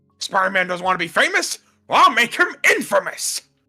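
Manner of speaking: loud, high-pitched, belted-out voice. Told they do a decent J. Jonah Jameson, the speaker performs one: J. Jonah Jameson impression. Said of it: "you can do a pretty decent J Jonah".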